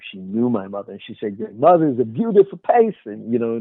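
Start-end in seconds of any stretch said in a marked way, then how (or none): 1.4-3.3 put-on Philadelphia accent. Retelling what a young woman at the door said: imitating a philadelphia accent. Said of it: "that Philadelphia accent".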